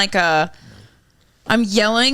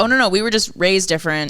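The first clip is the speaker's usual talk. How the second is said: ordinary talk, nothing marked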